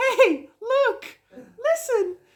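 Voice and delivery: very high, piping, squeaky video-game fairy voice. Mimicking how the other speaker sounded at thirteen; Zelda fairy voice. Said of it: "I sounded exactly like that fairy from that one game".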